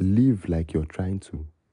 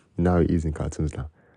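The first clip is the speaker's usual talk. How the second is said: ordinary talk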